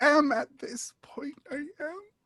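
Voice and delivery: very high teary voice, close to crying. Replying to someone who says they sound on the verge of tears, near tears. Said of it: "you sound like you're on the verge of tears".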